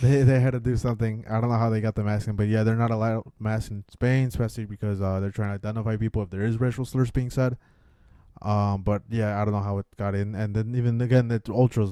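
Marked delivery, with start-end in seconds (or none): none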